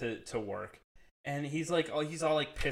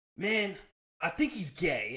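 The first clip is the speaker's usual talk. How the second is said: mock heartfelt, earnest, emotional, slow and pitched-up; 5 semitones higher than usual. Retelling what a friend said about his dog, imitating Ant's heartfelt emotion. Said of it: "it really was like true emotion".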